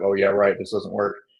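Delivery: plain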